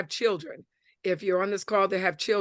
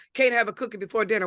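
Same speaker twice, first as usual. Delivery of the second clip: ordinary talk, nothing marked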